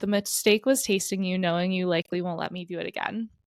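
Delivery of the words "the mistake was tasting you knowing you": ordinary delivery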